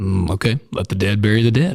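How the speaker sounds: play-acted, plain, matter-of-fact delivery. Guessing how he probably responded, imitating a matter-of-fact tone. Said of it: "kind of matter of factly".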